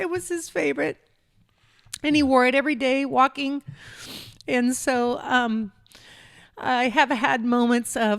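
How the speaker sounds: crying while talking. Talking about a late father's favorite jacket, crying while talking. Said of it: "I got a tickle in my throat as I'm crying".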